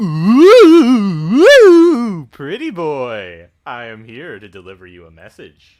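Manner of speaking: spooky ghost voice. Reading a ghost's game dialogue aloud: best ghost voice. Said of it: "I'm gonna do my best ghost here".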